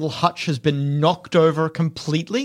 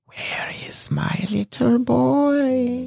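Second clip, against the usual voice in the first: put-on disembodied, high, drawn-out boy voice; 8 semitones higher than usual. Game master voices a voice the player character hears on the way back to town, whispering. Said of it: "like someone were whispering there".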